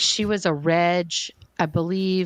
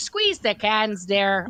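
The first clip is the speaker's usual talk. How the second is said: fake Midwest accent, held throughout; 4 semitones higher than usual. Starting a course, unable to drop a put-on Midwest accent. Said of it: "I couldn't drop the accent".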